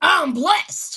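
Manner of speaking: loud, full-chested voice. Speaker leads listeners in repeating a phrase, said with the chest. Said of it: "Say it with your chest".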